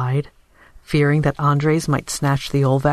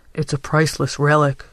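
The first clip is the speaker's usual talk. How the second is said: plain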